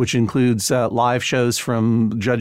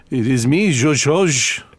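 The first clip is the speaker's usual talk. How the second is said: ridiculous put-on French accent. Answering a greeting from the other speaker: ridiculous put-on french accent. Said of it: "in these ridiculous accents".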